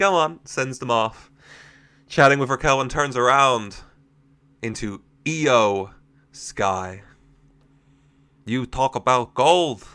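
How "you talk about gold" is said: strange put-on accent, half Irish, half Chinese. Voicing a character speaking to Liv, in an odd Irish-or-Chinese accent. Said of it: "was that an Irish a Chinese accent?".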